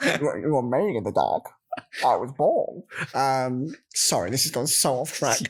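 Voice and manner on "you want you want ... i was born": movie-villain voice with swooping pitch. Joking about sounding like Bane after saying a driver's name: Bane voice. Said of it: "I sound more like Bane".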